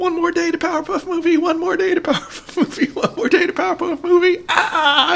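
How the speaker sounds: very high, very loud cartoon voice. Retelling a TV bit counting down days to a movie; bad Brak impersonation. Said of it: "This is a bad Brack impersonation".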